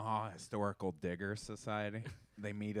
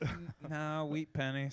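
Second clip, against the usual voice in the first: stumbling, tongue-tied, pitched-up, flustered stammer; 6 semitones higher than usual. Retelling a flustered reply to a stranger: imitating own stammering. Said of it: "I just started stammering around".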